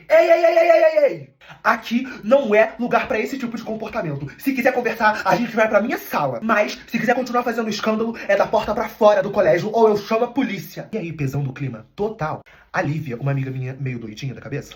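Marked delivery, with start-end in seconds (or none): 0.1-10.9 loud, impatient, exasperated angry shout. Retelling how the principal lost patience with everyone: imitating the principal shouting. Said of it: "a diretora perdeu a paciência e gritou assim pra todo mundo ouvir".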